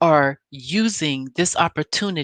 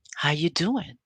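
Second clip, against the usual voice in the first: soft, smooth, calm, peaceful smooth-talking voice; 5 dB quieter than usual. Retelling how a man walked in and greeted someone, imitating soft smooth talk. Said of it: "And he's real soft".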